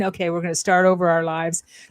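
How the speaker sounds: ordinary talk, nothing marked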